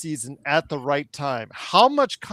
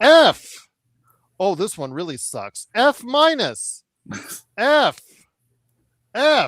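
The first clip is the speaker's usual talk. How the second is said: put-on harsh, stern voice, higher and louder; 6 semitones higher, 7 dB louder than usual. Doing an impression of Joe grading papers for a guest: imitating Joe grading papers. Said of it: "my impersonation of Joe grading papers".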